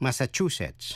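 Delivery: Massachusetts stressed on third syllable, chu. Teaching how to pronounce us state names: stress on third syllable of massachusetts. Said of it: "Nhấn mạnh vần thứ ba".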